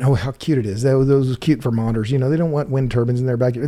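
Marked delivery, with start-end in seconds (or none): none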